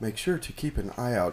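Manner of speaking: quiet low-key speech, not quite whispering. Tabletop player voicing his character speaking low to a party member, quiet, not quite whispering. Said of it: "but kind of quietly say".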